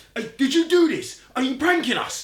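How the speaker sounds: hysterical, very shrill, very loud scream. Recounting how a man started screaming at the speaker; retelling someone screaming. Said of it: "he starts screaming at me".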